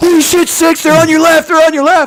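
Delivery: frantic alarmed yell, very high and very loud. Showing how a panicked call to the troops would sound, freaking out. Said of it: "I'm freaking out".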